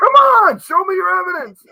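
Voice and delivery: very high, very loud screaming. Retelling watching paranormal videos at home: retelling screaming at the TV. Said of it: "screaming at the television".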